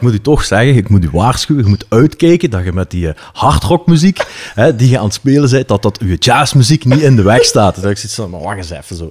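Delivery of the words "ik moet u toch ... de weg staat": put-on Limburg regional accent. Retelling what the department coordinator told him, in a heavy Limburg accent. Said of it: "met een echt zo'n heel Limburgs accent".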